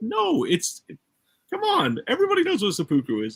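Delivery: high, fast, exasperated and disbelieving. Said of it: "I was like".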